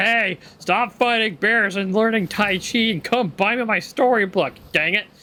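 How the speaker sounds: high, put-on nagging, complaining voice. Imitating a game character who keeps nagging: imitating Ruby nagging. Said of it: "why is she barking up my back".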